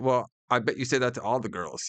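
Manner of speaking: ordinary talk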